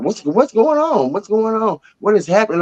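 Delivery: put-on very high-pitched, bewildered, alarmed yelling. Retelling being held in a police car, re-enacting own yelling. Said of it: "I'm yelling from the car".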